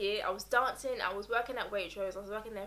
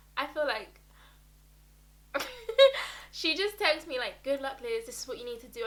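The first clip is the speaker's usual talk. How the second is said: crying while talking, tearful voice; 4 semitones higher than usual. Recalling a friend's good-luck text before a first job interview, crying while talking. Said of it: "I don't know why I'm crying".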